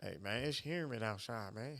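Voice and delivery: put-on Memphis accent. Showing the accent used to fool people, fake Memphis accent. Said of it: "I faked a Memphis accent".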